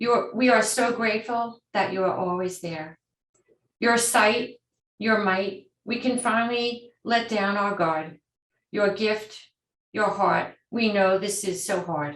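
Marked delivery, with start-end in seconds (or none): 8.7-12.2 moved, heartfelt, emotional, feeling welling up. Speaking words of thanks to caregivers, getting emotional. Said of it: "I'm getting emotional, I'm sorry".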